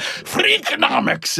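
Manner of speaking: put-on very high, bizarre Scottish-accented bleat. Recalling a radio segment that dissolved into laughter, doing a bizarro Scottish bleat. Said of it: "such a bizarro Scottish bleat".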